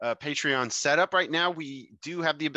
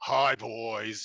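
echoey put-on voice, lower pitch; 4 semitones lower than usual. Retelling a story where Satan answers back, using an echoey Satan voice. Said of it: "you hear back in this like echoey voice".

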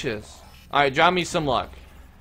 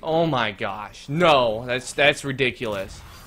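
usual speaking voice

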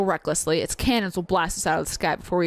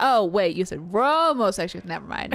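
plain

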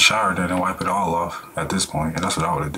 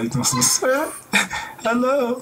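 very high swooping voice, fighting back laughter. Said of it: "I'm trying not to laugh".

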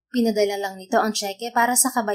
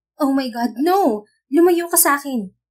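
terrified, frightened scream, high and drawn out; 5 semitones higher, 6 dB louder than usual. Narrator voicing a woman in a bar as a strange man approaches, frightened scream. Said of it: "Natatakot niyang sigaw".

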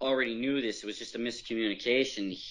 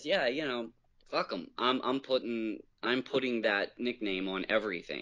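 ordinary delivery

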